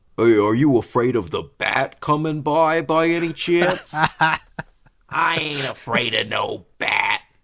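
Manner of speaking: loud, high-pitched, cartoonish ghost voice. Two speakers riff on casting voice actors: Casper's uncle voice. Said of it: "that's my impression of uh, Casper's uncles".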